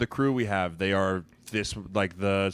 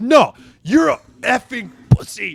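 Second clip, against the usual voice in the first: put-on scream, higher and louder; 13 semitones higher, 11 dB louder than usual. Retelling a player's outburst at a referee: imitating someone screaming. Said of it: "and just screams it at him".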